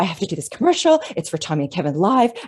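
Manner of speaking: acted frantic, excited, fast rush of panicky words. Retelling a friend's phone call about a commercial: imitating excited panic. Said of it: "this excited sort of panic".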